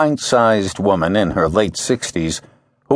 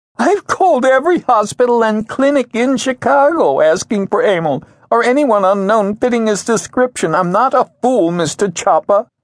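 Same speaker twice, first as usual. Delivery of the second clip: raised, very high-pitched voice; 12 semitones higher than usual. A frail woman, worried about missing emil, answers mr. chopper, raising her voice. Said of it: "She raised her voice".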